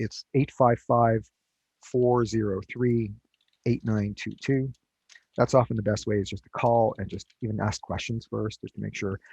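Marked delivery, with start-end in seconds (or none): 0.0-4.7 slow, carefully paced delivery. Giving listeners a phone number to write down, speaking slowly. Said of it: "I'll just say it slowly".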